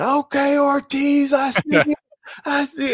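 very high, drawn-out, celebratory screaming. Retelling teammates screaming after a touchdown in practice: retelling players screaming. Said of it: "Tom Brady just screaming".

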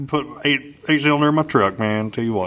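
put-on cartoon drawl. Asked how they talked years ago, the guest does a Boomhauer impression. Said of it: "he talks like this".

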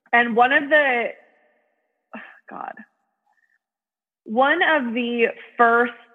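appalled, flustered voice, struggling to get words out. Reading a dictionary's example sentences to the other speaker: appalled, struggling for words. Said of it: "I'm just like so appalled I can't even form words".

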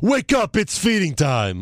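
acted, forceful, stretched-out shout. Speaker imitating how he used to say his line: mock forceful shout. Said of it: "he used to say it with a lot of force".

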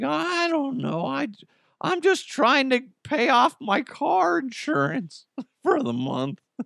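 very high, slow, swooping drawl. Acting out the attendant answering a complaint, in a Shaggy-like voice. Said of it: "He kind of sounds like Shaggy".

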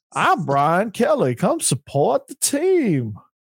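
put-on Southern accent. Imitating a man trying to sound Southern, in a Brian Kelly fake Southern accent. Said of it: "he's trying to be Southern".

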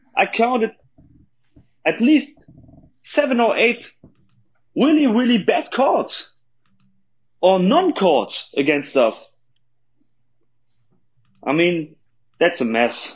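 frustrated, fed-up, high and swooping pitch. Speaker recapping a game with bad calls against his team; frustrated. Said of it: "You hear the frustration in his voice".

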